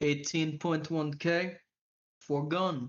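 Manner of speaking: put-on Nordic accent coming out sounding Russian. Voicing a gun seller naming the price: bad Nordic accent. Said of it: "I wish I was better at a Nordic accent".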